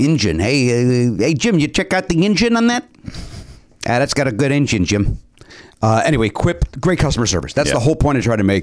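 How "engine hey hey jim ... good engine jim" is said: horrible fake Chicago accent with drawn-out hey. Chatting with another speaker, he riffs on car talk: horrible Chicago accent. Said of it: "That's my horrible Chicago accent".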